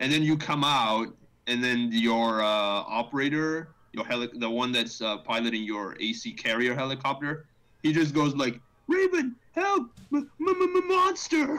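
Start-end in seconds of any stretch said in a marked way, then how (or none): 8.9-11.6 put-on stuttering cry on 'monster', much higher, slower. Describing a game's helicopter pilot calling to Raven: imitating a stuttering cry for help. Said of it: "like stuttering the word monster before he dies".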